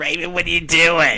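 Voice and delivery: put-on motherly Boston accent. Mocking a co-speaker's version of a mother's voice, imitating fake Boston accent. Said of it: "I know your version of her voice".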